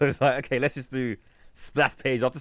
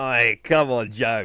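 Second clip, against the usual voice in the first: put-on East End London accent, loud and slow; 6 dB louder than usual. Imitating an actor's line from G I Joe: imitating an East End actor's voice. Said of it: "his voice in G I Joe".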